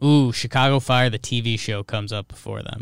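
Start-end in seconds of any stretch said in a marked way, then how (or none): none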